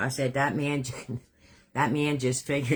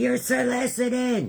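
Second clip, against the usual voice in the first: mock full-on yelling, very high and shrill; 11 semitones higher, 3 dB louder than usual. Retelling own words from an earlier incident: imitating own yelling. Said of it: "I'm yelling".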